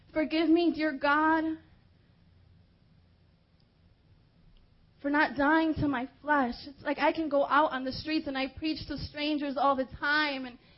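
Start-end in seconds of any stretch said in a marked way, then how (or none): 0.2-6.6 mock weeping, tearful, pleading tone. Retelling praying to god after hearing of a death: retelling a tearful prayer. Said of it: "and I'm crying, and I'm saying".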